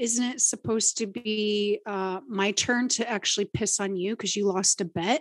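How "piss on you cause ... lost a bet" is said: ordinary talk, nothing marked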